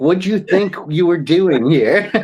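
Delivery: put-on talking-down tone. Retelling what a bartender said, imitating a condescending bartender. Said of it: "She said it like I was an idiot".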